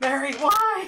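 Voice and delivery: shrill, very high, very loud, full-volume scream. Voicing a man cut down in battle, screaming at his attacker: character screaming. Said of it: "So he will scream that as he falls".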